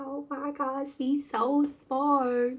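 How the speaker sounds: high, slow, proud gushing motherly voice. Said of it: "I'm like".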